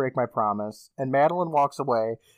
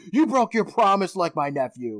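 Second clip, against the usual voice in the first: play-acted, reproachful, scolding yelling outburst; 4 semitones higher than usual. Telling a ghost story, acting out the old lady ghost yelling at a girl. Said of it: "She just starts yelling at her".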